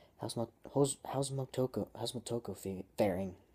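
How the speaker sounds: plain reading voice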